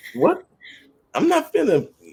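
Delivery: very high, loud, incredulous outburst. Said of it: "It's like".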